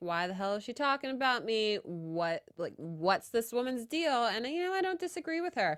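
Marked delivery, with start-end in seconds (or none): none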